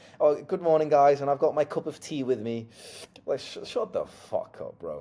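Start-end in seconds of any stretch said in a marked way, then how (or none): 0.2-2.7 mock sugary, gushing, cheery vlogger voice. Mocking YouTubers who open videos with chatty greetings: imitation of a YouTuber greeting.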